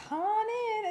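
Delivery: high, sweet, warm voice.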